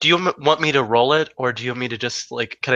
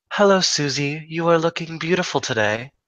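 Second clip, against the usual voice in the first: kind, gentle, tender voice; 4 semitones higher than usual. She smiles into the bag and greets Susie, smiling and speaking very softly. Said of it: "smile very softly into the bag and say".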